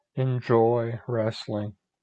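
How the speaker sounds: low, flat, deadpan voice with zero enthusiasm. John signs off a wrestling show at the host's prompt: flat, unenthusiastic. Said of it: "you don't sound like you're enjoying it".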